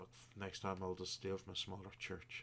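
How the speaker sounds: muttering under the breath. Telling the story, the speaker voices a man walking away, muttered under his breath. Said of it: "you hear him this under his breath".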